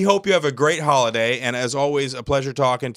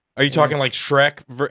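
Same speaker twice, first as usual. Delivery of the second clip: usual speaking voice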